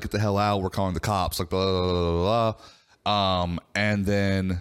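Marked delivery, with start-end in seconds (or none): none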